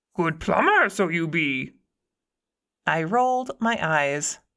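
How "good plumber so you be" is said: lilting, swooping, sing-song creature voice, pitch swinging widely. Reading aloud a character's teasing reply: Yoda voice. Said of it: "I saw the Yoda voice coming".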